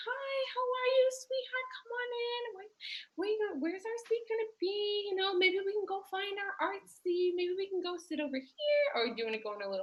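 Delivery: put-on soft, gentle, very high little-kid voice. Demonstrating how to welcome a little kid, talking to a little kid. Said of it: "So if you're talking to a little kid".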